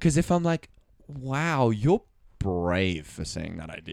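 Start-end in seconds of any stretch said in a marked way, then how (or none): 1.1-3.9 mocking sarcasm, lower and quieter. Showing how tone of voice changes a compliment, saying it sarcastically. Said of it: "It's like your idea ... horrible".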